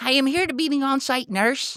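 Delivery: put-on Wisconsin accent, very high-pitched. Retelling a nurse introducing herself on arrival: imitating a Wisconsin accent. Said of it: "some lady with a Wisconsin accent walks up and goes".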